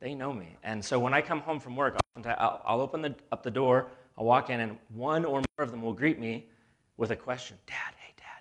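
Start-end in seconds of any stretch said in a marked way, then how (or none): 7.7-8.4 put-on secretive, barely voiced, childlike hushed whisper. Retelling how the kids greet their dad at the door: imitating kids whispering. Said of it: "they're whispering".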